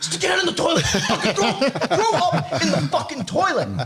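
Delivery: very high-pitched barked yelling. Retelling yelling at a daughter who threw up: retelling own yelling. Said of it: "yelling at her".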